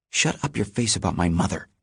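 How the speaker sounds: hissing, spoken in a hiss. A narrator reads a character's reply to a jab about his mother, hissing. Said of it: "he hisses".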